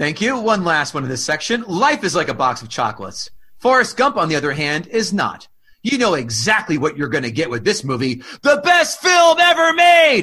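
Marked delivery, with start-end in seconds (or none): 8.4-10.2 shrill, very high, drawn-out scream. Reading an all-caps line of a review aloud: screaming. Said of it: "That's why I have to scream".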